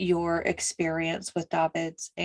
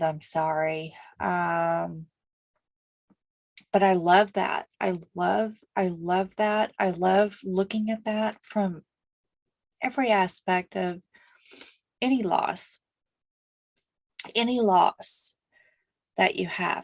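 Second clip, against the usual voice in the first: slightly crying, tearful voice. Gathering yourself while talking about a loss, crying a little. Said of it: "I'm crying just a little bit".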